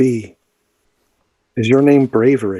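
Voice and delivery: softly whispered. Leaning close while casting mending, a player's character speaks to the creature: whispering. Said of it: "and I'll whisper to it".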